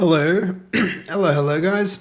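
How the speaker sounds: coughing through words. Greeting chat at the start of the stream, choking while talking. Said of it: "Choking here".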